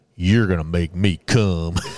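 very low, deep put-on manly voice. Retelling a movie scene, quoting a woman in it: manly voice. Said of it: "in a manly voice".

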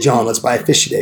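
ordinary talk

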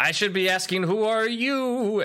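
high yell with the word "you" stretched out. Narrating a cave scene where an unseen voice answers the listener, yelling back. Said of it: "The voice yells back".

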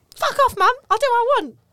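put-on very high, very loud, shrill Essex accent. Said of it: "Since when are the Hammersley's from Essex?".

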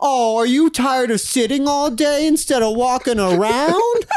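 very high, snide, needling, sarcastic put-on voice. Retelling a remark to a guy they fought with; retelling in a put-on voice. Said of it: "but I know I did in this voice".

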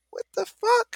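high-pitched shocked exclamation. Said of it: "and it's like".

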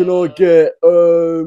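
thick, high, loud fake Cockney accent. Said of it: "I've got to do a Cockney accent".

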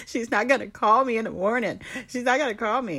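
put-on screaming through tears. Retelling breaking down the night before her birthday, reenacted screaming and crying. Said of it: "And I'm like screaming".

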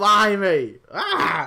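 mock Australian yelling. Imitating how Australians sound to the speaker: imitating loud Australians. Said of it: "very loud".

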